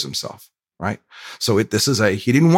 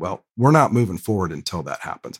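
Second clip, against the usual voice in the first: ordinary delivery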